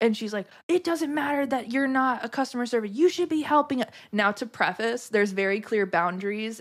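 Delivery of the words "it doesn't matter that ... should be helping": indignant, heated, high angry scolding. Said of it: "she started screaming so loud".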